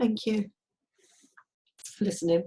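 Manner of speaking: tearful speech, crying through the words. Ending a speech to someone loved for years, crying while talking. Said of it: "Sorry for the tears again".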